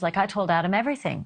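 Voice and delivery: ordinary talk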